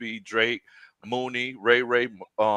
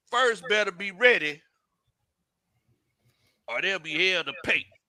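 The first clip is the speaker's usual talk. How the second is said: put-on country voice, higher pitch; 7 semitones higher than usual. Reading a chat message in the viewer's manner: reading like John Harris. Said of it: "So I gotta read this like John Harris".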